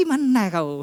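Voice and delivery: Indonesian with a Madura-style accent. Addressing the audience, showing a regional version of the question: Madurese accent. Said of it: "persi Madura".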